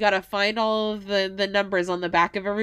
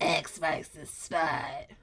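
low, soft, slow, eerie, breathy delivery. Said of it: "like, Beverly Mitchell".

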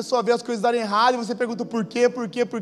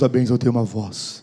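lower-pitched put-on divine voice; 12 semitones lower than usual. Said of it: "Fala com voz como se fosse a voz de Deus".

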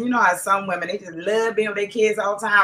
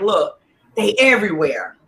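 normal talking voice

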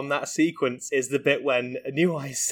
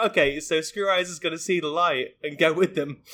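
ordinary talk

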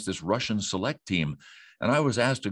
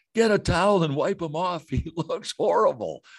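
imitated screaming, higher pitch; 8 semitones higher than usual. Retelling how a producer screamed at the stage manager: imitating someone screaming. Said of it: "he's screaming in my ear".

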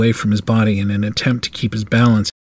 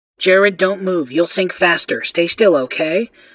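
piercing, shrill, high, urgent voice; 8 semitones higher than usual. Barbara calls out to Jared from nearby; shrill voice. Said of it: "Barbara's shrill voice said".

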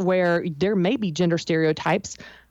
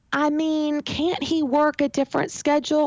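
put-on pitched-up, teenager-sounding, filler-laden delivery; 8 semitones higher than usual. Showing how a hedged question sounds in a meeting: sounding like a teenager. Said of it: "You sound like a teenager".

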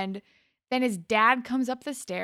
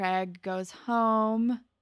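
normal talking voice

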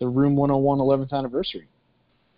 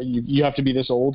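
ordinary talk

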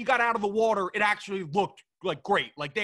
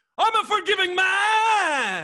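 acted very high, very slow, booming swooping shout; 10 semitones higher, 5 dB louder than usual. Retelling a movie villain's rant: imitating Maxwell Lord yelling. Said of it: "he just yells out".

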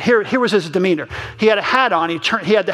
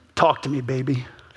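soft, very low, sexy, sultry voice; 7 semitones lower, 5 dB quieter than usual. Telling how a man answered his ringing phone, mimicking a soft, low, sexy voice. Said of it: "he says in a soft, low, sexy voice".

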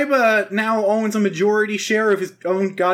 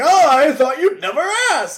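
put-on old man voice, higher and louder; 7 semitones higher, 4 dB louder than usual. Retelling an episode, imitating Yugi's grandpa. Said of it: "then Grandpa's all like".

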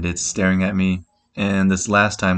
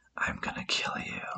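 put-on hushed, very quiet child's whisper. Retelling how a small cousin told someone: imitating a child's whisper. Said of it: "she whispers".

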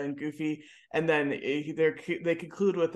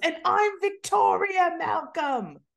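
shrill, very high-pitched shout; 14 semitones higher, 4 dB louder than usual. Describing a movie scene of visitors at a boy's hospital bed: retelling a yell. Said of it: "yells in the".

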